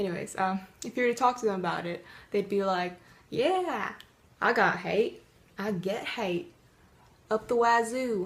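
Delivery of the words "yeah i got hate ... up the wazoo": terrible, very slow southern drawl. Imitating a YouTuber talking about getting hate: terrible southern accent. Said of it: "if they had a terrible southern accent".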